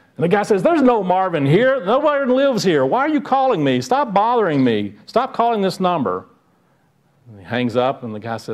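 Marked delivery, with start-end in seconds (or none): 0.6-6.3 mock irritated man losing his temper, angry, pitched up. Retelling a joke, a man answering a repeat caller: imitating an angry man. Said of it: "that's anger".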